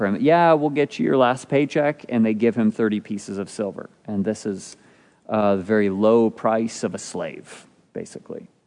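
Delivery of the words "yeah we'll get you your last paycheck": mock scoffing, derisive, pitched-up delivery. Retelling how they pay him his last wages, imitating a mocking reply. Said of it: "in quite mocking fashion".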